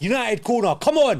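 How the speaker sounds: urging shout. Watching a united match live and urging the team on at a corner, shouting. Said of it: "Sorry if I'm shouting at you guys".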